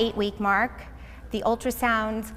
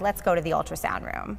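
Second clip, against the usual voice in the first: acted grave, subdued, low, somber voice, spoken quickly; 5 semitones lower, 4 dB quieter than usual. Retelling the man with the Doppler after he couldn't find the baby: retelling a somber voice. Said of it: "in a much more somber voice".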